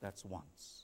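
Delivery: very quiet, barely-there hushed whisper. Retelling a man's story of his wife's mule stumbling, very quietly. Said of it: "I heard my wife very quietly say".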